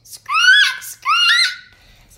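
very high, shrill, squawking parrot cry. A boy introduces himself, then does his parrot impression. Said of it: "And here's my parrot".

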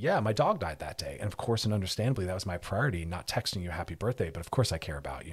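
plain

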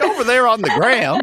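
put-on old-timer voice. Showing how the phrase sounds when said himself: put-on old-sounding voice. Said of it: "When I say it, I just sound old".

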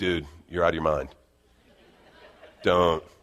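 Southern California surfer-dude voice. Speaker voices the Spirit answering him; Southern California surfer voice. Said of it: "the Spirit to me sounds like a Southern California surfer".

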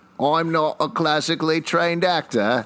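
ridiculous, high-pitched, put-on Australian accent. Asked by the others to try an Australian accent: Australian accent. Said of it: "let's hear your Australian accent".

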